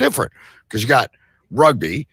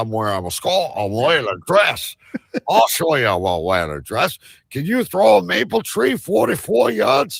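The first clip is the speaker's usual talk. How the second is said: fake New York accent, pitched up; 9 semitones higher than usual. Speaking as one of the guys in dresses: put-on New York accent. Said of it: "With a New York accent, I said that".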